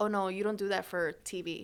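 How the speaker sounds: normal talking voice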